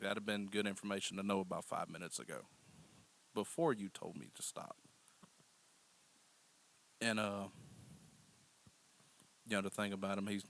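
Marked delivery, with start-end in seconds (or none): none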